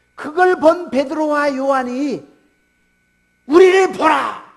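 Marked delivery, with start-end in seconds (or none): 3.5-4.4 loud, commanding calling out. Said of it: "라고 외칩니다".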